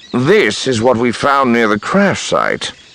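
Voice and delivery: solemn, heavy-hearted, grim, grave. Reporting to the captain what was found near the crash site, grim. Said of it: "Barriss said grimly".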